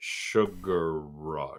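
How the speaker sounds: deliberate, slow, drawn-out sugar. On a podcast, repeating a name once more for the others, said slowly. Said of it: "Thank you for saying it slowly".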